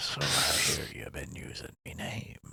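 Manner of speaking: put-on quiet, hushed, soft Irish pirate accent. Imagining the real Crimson Jack confronting them, a speaker does Crimson Jack's little Irish accent. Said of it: "His little Irish accent".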